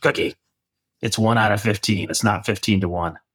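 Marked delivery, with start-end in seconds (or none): 0.0-2.1 gravelly, raspy coach-style voice. Recalling what your mentor, a coach, told you when he called you Cookie, in a gravelly Bill Campbell voice. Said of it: "He had this gravelly voice".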